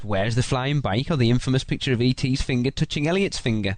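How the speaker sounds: usual speaking voice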